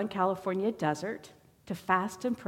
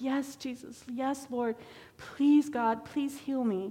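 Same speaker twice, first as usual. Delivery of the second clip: slower, mock tearful, crying, pleading voice; 5 semitones higher than usual. Recounting a man agreeing in prayer while being prayed over, imitating someone crying in prayer. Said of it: "and Kevin's crying".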